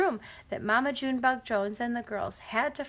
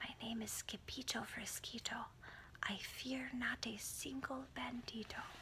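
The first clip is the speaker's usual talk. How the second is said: very soft, quiet, hushed, barely raised voice; 17 dB quieter than usual. A sword-fighter facing a flying bandito introduces himself in a very soft voice. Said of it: "muy soft voice he said".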